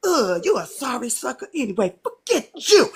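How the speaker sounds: curt brush-off tone. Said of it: "I'ma say".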